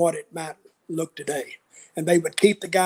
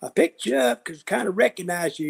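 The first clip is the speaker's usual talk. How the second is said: put-on Southern accent; 2 semitones higher than usual. Retelling what a truck driver said: imitating a Southern accent. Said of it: "He had a real Southern accent".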